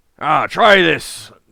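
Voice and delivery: very loud, hearty, booming, slightly pirate-like bellow. Voicing a jovial character for viewers, in a slightly piratey voice. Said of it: "It's still a little piratey".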